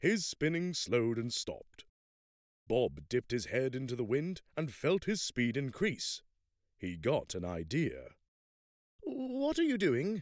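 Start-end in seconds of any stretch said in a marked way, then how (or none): 9.0-10.2 nervous, anxious mumbling, pitched very high. Helen asks Bob what he is doing as they fall, mumbling almost anxiously. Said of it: "Helen mumbled almost anxiously".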